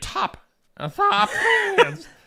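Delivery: very high, slow, squeaky cracking voice. Reading birthday shout-outs, calling Dave Peterson a top fan, voice cracking. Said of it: "I don't know why my voice cracked there".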